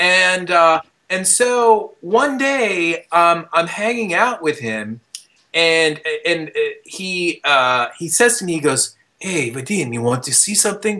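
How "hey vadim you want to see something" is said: terrible, bad put-on Japanese accent. Retelling what a mysterious friend said to him one day, bad japanese accent. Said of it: "my accent is terrible".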